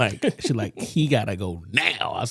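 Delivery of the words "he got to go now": slow, fed-up, pissed-off angry voice. Retelling a phone call from a pissed-off mom: imitating a pissed-off mom. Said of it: "So she calls me pissed".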